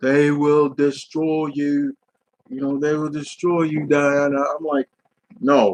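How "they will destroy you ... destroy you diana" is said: put-on stately, lordly, regal British accent. Complaining the war god was miscast, quoting his line to Diana: Ares in regal British accent. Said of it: "speaks with a regal British accent".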